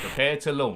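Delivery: ordinary delivery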